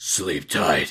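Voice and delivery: put-on gruff superhero voice. Reading a story line aloud after a request: Batman voice. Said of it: "Batman voice, please".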